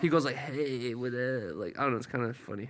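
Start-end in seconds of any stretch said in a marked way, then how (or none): 0.4-1.6 smooth, soft, suave delivery. Describing how Trevor sounds coming on the podcast, imitating Trevor's suave voice. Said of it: "Trevor has a suave voice".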